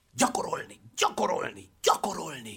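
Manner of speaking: pressing, insistent, urgent hushed whisper. The circus director speaks to the circus performers in an urgent whisper. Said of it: "sürgetően suttogta".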